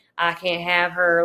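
fake Midwestern accent, not done well. A reader quotes the hero's line from a book, bad Midwestern accent. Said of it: "a lot of dialogue is very like Midwestern".

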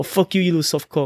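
put-on New Zealand accent. Retelling what his New Zealander friend said to him, in a New Zealand accent. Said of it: "that's a pretty good accent".

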